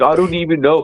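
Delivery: put-on older Missouri man's accent. Quoting a guy busted for stealing shoes, imitating a Missouri accent. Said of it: "He had an accent".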